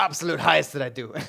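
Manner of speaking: fast, laughing voice with Greek accent.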